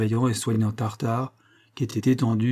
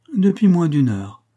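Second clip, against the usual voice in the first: syrupy, sugary, honeyed voice, high and raised; 6 semitones higher, 7 dB louder than usual. Narrator reading the housekeeper answering a question, in a sugary tone. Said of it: "répondit la femme de charge d'un ton doucereux".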